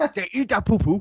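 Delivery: Nigerian English accent. In a group joking about accents, the speaker does a bit: imitating a nigerian accent. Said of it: "I am doing Nigerian".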